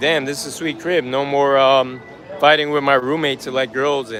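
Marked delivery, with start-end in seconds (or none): none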